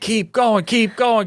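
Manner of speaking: high, cheering, encouraging yell.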